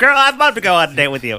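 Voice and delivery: high, loud, fast sassy guy voice.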